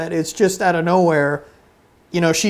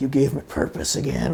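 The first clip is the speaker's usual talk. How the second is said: intense, breathy, hushed near-whisper; 5 semitones lower, 7 dB quieter than usual. Retelling a show scene where Cyril confronts her: imitating Cyril super intensely. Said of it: "super intense".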